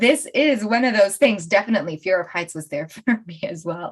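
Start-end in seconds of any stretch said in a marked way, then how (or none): 1.5-3.9 soft, giggling through words, holding back laughter. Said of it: "I'm laughing now".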